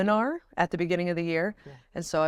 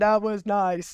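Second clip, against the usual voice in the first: put-on flat deadpan tone, higher pitch; 3 semitones higher, 3 dB louder than usual. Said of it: "That's emotionless".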